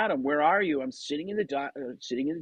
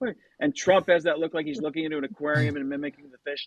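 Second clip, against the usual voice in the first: ordinary talk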